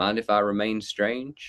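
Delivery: put-on, joking Southern American accent. Recalling joking around with others while finding the words, Southern American accent. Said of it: "joking around with like a Southern American accent".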